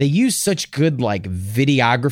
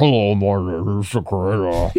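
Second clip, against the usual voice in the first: low, slow, warped, distorted, disguised voice; 6 semitones lower than usual. Imitating a hacker's interview: imitating a distorted voice. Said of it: "his voice is all distorted".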